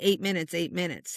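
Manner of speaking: plain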